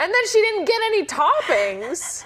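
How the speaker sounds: very high-pitched, affronted, offended indignation. Retelling how a friend ordered froyo with no toppings: offended. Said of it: "You sound so offended".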